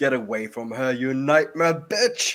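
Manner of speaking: rising, heated, fierce acted battle cry. Voicing a character who punches an enemy: screaming in character. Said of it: "throws a punch as he screams".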